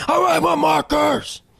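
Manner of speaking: put-on shrill, raspy, high, rough child's yell. Telling about a kid on a flight, imitating a screaming kid. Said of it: "he just screamed".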